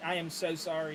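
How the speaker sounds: ordinary delivery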